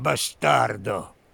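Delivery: hoarse rasp through gritted, clenched teeth. Explaining how the Italian insult is pronounced: bastardo through clenched teeth, hoarse. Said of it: "pronuncia la frase con i denti ben stretti e la voce un po' roca".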